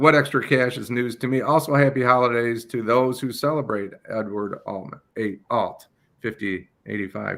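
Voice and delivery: normal talking voice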